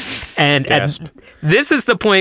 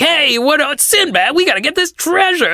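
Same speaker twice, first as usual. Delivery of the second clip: hammy, exaggerated, high-pitched New York tough-guy voice; 11 semitones higher than usual. Giving the voice of the character Kebab when asked: Kebab's hammy Kevin James-like voice. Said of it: "it's like a Kevin James kind of".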